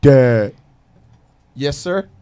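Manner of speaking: put-on very deep voice of a young kid. A father imitates his ten-year-old son answering him, imitating Devontae's deep voice. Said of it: "Devontae has the deepest voice for a ten year old".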